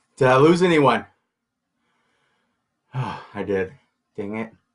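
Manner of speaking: out of breath. Speaker checks whether they lost anyone, out of breath. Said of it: "now I'm all out of breath".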